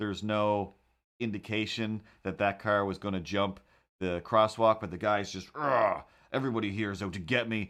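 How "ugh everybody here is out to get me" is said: mock agitated, grumbling male voice. Describing a video of a man walking his dog; imitating an agitated man. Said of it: "he's clearly just agitated".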